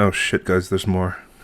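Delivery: hushed, straining to keep voice down. Voicing a character warning the group in a hushed voice: trying to speak very quietly. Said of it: "very quietly, or try to be very quietly".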